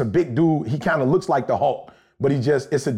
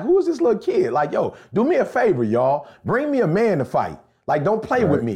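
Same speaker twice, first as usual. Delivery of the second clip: mocking, taunting tone in a higher voice; 6 semitones higher than usual. Retelling the David story, imitating Goliath mocking. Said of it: "he mocked David".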